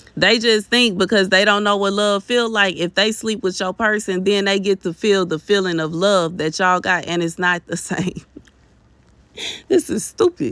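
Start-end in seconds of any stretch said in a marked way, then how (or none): 7.1-10.6 laughing while talking, speaking through laughter. Giving an opinion, laughing while talking. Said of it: "I'm sorry for laughing".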